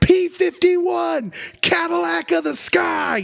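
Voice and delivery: very high, thrilled, excited shouting. Recounting a story, a boy running on a building's roof: retelling an excited shout. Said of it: "he's shouting".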